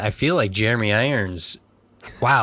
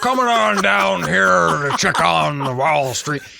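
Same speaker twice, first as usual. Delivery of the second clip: bad, horrible fake Texan accent; 7 semitones higher, 4 dB louder than usual. Imitating an English guy's accent after the bomb goes off, in a horrible put-on Texan accent. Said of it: "that horrible Texan accent".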